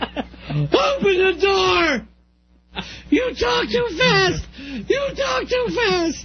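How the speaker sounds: high, slow, panicked screaming and crying. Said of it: "I'd have been screaming and crying to get out of there".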